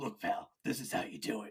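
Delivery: hushed, breathy, whispered orc character voice. Voicing an orc on its turn in a tabletop game, orc voice. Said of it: "then it's another orc's turn, and he goes".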